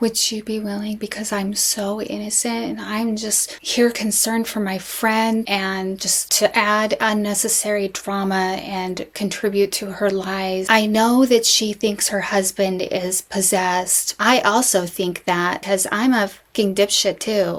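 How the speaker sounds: mock reverent voice, slow and overdone. Mocking what Melanie asked about the purse: imitating Melanie's reverent voice. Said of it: "Melanie is using what is called her reverent voice".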